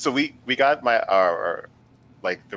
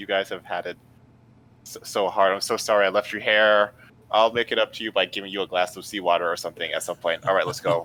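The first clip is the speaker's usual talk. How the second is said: usual speaking voice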